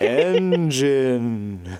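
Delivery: slow, eerie, ghostly voice, "engine" drawn out. Introducing today's word for a topical touch, in a spooky voice. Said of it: "introduce this word in kind of a spooky voice".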